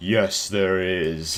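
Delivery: menacing, sinister, threatening tone. Retelling a voice heard during sleep paralysis, retelling a menacing voice. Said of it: "I hear this like menacing voice like".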